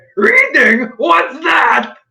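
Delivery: character voice pitched way up high. During the game, a player speaks as the character Zombie, in Zombie's voice. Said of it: "let me know if I'm getting Zombie's voice right".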